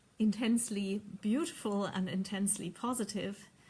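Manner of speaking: ordinary talk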